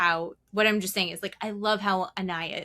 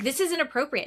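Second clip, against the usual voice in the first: said loudly, voice raised; 7 semitones higher than usual. Retelling a complaint made at breakfast about noisy kids: imitating saying it loudly. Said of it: "I said it loudly".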